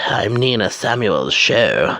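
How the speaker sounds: posh promo-style announcer voice. Recapping a wrestling promo, quoting its line: imitating Nina Samuels' posh voice. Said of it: "her new posh voice".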